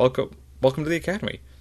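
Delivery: high, fast, cheerful and welcoming.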